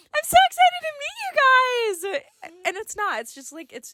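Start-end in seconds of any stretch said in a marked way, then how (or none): 0.1-2.2 put-on high bubbly voice, higher still. Imitating how a roommate was expected to sound: imitating Juliana, higher excited voice. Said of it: "I thought it would be kinda like".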